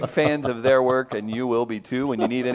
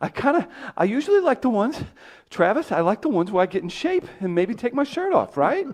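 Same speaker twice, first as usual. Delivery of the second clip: put-on Boston accent, higher pitch; 9 semitones higher than usual. Greeting the others as a guest on the show: Mark Wahlberg impression. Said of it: "Mark, are you here?".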